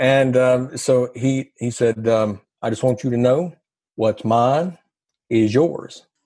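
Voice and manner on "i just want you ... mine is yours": imitated Southern accent. Recounting meeting a man named Richard, speaker imitates Richard's Southern accent. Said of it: "if you think I've got a Southern accent".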